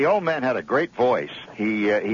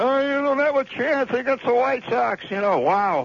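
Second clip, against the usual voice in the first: very high-pitched bellowing, jeering tone; 12 semitones higher than usual. Retelling how an old fan heckled Gehrig at batting practice; retelling a bellowing heckle. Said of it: "he's bellowing out".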